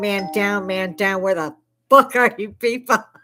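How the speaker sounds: loud, furious, alarmed scream. Retelling a drill sergeant carrying an injured person into hospital: imitating someone screaming. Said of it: "he's walking in screaming".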